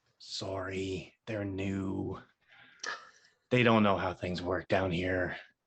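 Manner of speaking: speaking low. Told others are close enough to hear, speak in a lowered voice. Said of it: "Lowering my voice".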